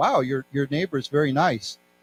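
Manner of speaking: ordinary delivery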